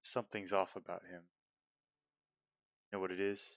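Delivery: whispered aside. Narrating a scene, voicing Esmeralda as she comes up to Elisabetta, whispering. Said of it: "she kind of whispers at you".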